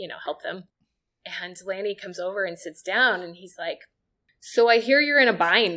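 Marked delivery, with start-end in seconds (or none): 4.4-5.8 put-on raised voice with a Canadian accent. Assistant retelling Lanny coming over during a meal: Lanny's Canadian accent. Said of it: "in his Canadian accent".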